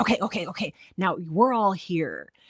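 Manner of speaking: thrilled, eager, worked-up storyteller voice. Describing a story's tense change, imitating the narrator getting really excited. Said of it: "the narrator got really excited".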